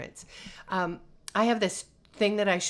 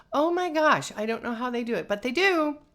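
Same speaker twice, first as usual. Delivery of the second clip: normal talking voice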